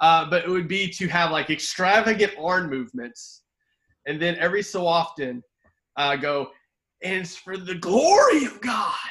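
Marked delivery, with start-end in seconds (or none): 7.0-8.9 raised, emotional, pitched-up preaching voice. Describing how to preach like Piper, the speaker imitates Piper's emotional voice. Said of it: "In a very emotional voice".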